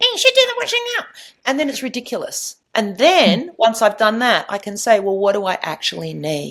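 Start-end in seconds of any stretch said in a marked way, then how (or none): 0.0-1.1 tiny, very high, rapid helium-like mosquito squeak. Showing how the word 'should' sounds in the speaker's head, in a funny little helium voice. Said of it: "it has this funny little voice like this".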